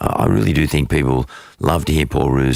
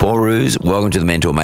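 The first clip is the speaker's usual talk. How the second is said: croaky, worn-out, hoarse voice; 6 semitones higher than usual. Podcast host welcoming his guest after losing his voice from shouting: hoarse, lost voice. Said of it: "excuse my voice".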